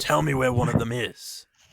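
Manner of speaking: rasping voice. Acting out a role-play scene about fresh bodies, raspy voice. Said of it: "he's meant to sound raspy".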